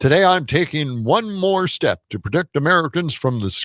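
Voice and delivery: put-on old-school evening news anchor announcer delivery. Reading out a presidential statement in a Walter Cronkite voice. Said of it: "that's Walter Cronkite".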